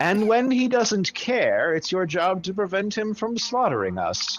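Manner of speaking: put-on casual, bored, uninterested old woman voice, a bit high. Narrating a scene and voicing an old woman's reply: casual, bored voice. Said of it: "the old woman says in a sort of casual, bored voice".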